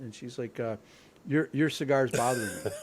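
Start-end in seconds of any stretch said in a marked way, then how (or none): 1.3-2.7 put-on offended, huffy, indignant voice. Retelling what a woman who marched up to the tee box said: imitating an indignant woman. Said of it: "she was, like, just so indignant".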